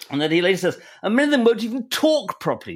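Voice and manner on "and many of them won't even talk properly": put-on fairly posh, proper accent, pitched up. Reading out a man's quoted remarks, in a fairly posh accent. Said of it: "I have to say this in a fairly posh accent".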